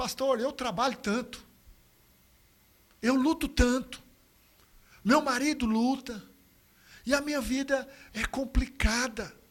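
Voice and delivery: crying, tearful, pleading lament. Retelling a woman's words as she began to cry: imitating a crying woman. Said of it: "ela começou a chorar".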